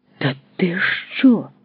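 genuine, honest, sincerely surprised astonishment. [name] reacts to his opponent over the chessboard, sincerely surprised. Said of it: "щиро дивується Яремний".

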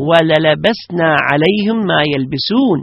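plain

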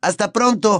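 very high shout, yelled out. Narrating a story, a boy calls from an open train window, shouting goodbye. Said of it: "gritó Harry desde la ventanilla".

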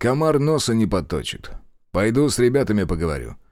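ordinary delivery

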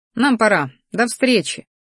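plain

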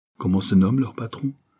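ordinary delivery, nothing marked

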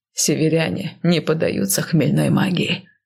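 plain reading voice

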